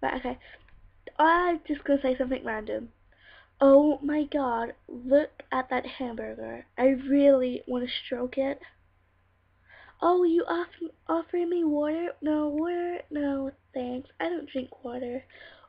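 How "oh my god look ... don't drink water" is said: slow, drawn-out put-on American accent. Speaker taking turns doing accents with another person; American accent. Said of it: "Next accent is going to be American".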